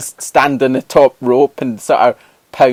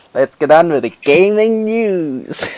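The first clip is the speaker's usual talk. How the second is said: excited fake American accent, "news" drawn out; 4 semitones higher than usual. Show host redoing the gaming news re-intro, in a put-on american accent. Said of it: "That accent".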